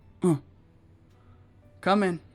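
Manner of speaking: rougher, gruffer tone of voice. Game narrator voices someone answering a knock at the door, gruffer voice. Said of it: "in a rather kind of gruffer voice".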